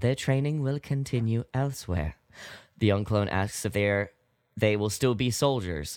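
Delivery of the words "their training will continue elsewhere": very somber, solemn, grave, sober voice. Retelling a scene, quoting Nala Se in her very somber voice. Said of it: "She says in her very, uh, somber voice".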